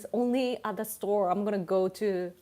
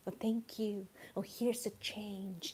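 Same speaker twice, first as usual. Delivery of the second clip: very hushed, artificially overpolite, clearly enunciated, acted; 10 dB quieter than usual. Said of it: "so polite and clearly pronounced".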